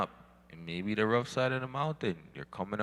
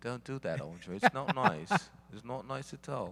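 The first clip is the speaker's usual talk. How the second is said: put-on English lady's voice; 4 semitones higher than usual. Quoting what an English lady would say to him, imitating an English lady. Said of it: "from a certain English lady say".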